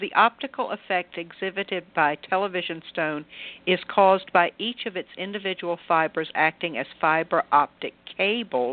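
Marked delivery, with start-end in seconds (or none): none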